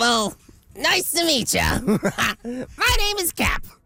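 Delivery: put-on character voice pitched very high. A voice actor, asked to hear the character voices, does one: Cap character voice. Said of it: "I'm going to have to hear some of the voices now".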